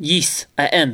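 put-on heavy, laid-on-thick Russian accent. Voicing Yuri answering a player's question: Yuri's heavy Russian accent. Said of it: "a really fucking heavy Russian accent".

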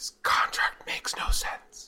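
whispered voice. The character walks up next to Mortimer Krim and speaks: whispering. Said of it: "just whisper to him".

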